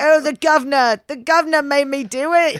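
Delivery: put-on British accent. Showing the British accent shared with an actor: put-on British accent. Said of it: "do the exact same British accent".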